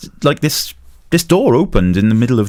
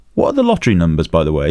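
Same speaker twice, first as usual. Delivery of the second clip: ordinary talk, nothing marked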